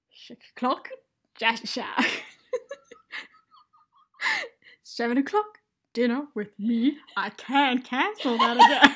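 very loud, swooping, wild cartoon voice, belted out. Doing a Grinch impression for the listeners after being asked. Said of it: "my Grinch impression".

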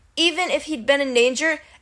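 plain

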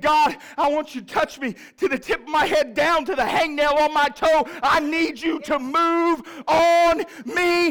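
screaming with full force, loud and high. Speaker acting out his own prayer to God: acting out a screaming prayer. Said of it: "I'm screaming with everything in my being".

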